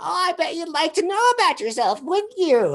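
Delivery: very high, odd, weird little talking-cat voice. Retelling how one of a group of glowing-eyed cats spoke to them, weird little cat voice. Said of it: "this little like weird cat little voice".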